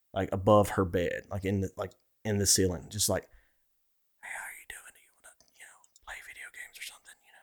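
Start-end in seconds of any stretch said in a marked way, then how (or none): 3.3-7.2 faint, very quiet, breathy whisper, barely there. Retelling what a woman heard above her bed at night: imitating a whisper.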